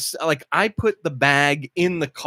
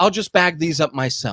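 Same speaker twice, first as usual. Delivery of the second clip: put-on sarcastic tone. Retelling own comment to a lady after paying: imitating own sarcastic remark. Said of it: "Was that a little sarcastic?".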